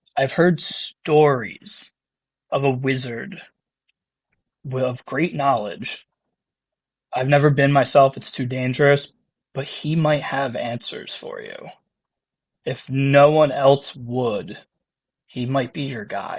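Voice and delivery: talking low and near. Game master voicing a character who leans in close to Goxon; talking low. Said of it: "now he's talking like low".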